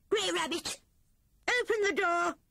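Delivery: very high-pitched crying out. A visitor knocking at the door calls for it to be opened, crying out. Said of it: "cried a voice".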